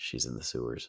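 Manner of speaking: mock dead-level, near-whispered flat monotone. Recounting a favorite movie scene where police ask where she is, Tim Robinson flat delivery. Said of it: "he just very very flatly goes".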